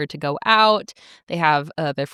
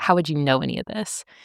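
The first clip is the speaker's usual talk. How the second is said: put-on snobby tone, quieter; 2 semitones lower, 4 dB quieter than usual. Retelling a plot scene where James cuts in: imitating a snobby comment. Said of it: "snobby ass comment".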